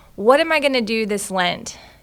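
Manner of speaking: ordinary talk, nothing marked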